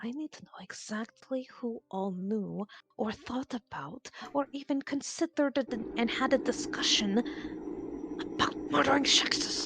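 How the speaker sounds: hushed, leaning-in voice. A player speaks in character, asking the group a question: voice lowered very much. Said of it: "lean forward and lower her voice very much".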